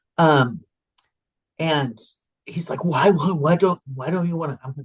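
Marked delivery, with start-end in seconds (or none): 2.8-4.9 put-on Israeli accent, man's voice. Retelling declining a holiday party invitation, in Avner's Israeli accent. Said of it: "I always use his accent".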